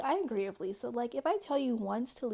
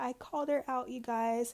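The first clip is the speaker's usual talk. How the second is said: put-on drunk, weepy, tearful crying voice. Retelling what a drunk person said after starting to cry: imitating someone crying. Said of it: "starts crying".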